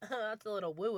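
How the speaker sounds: imitated, mock sarcastic tone. Imitating how people say it when sarcastic: imitating someone saying it sarcastically. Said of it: "when people say it sarcastic".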